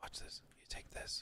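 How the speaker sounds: hushed, breathy, very quiet whisper. Showing viewers a trick to get past a paywall: whispering. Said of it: "I don't know why I'm whispering".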